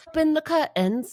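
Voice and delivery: very high-pitched, loud British accent. Friends guessing accents, one says a line for the others: British accent.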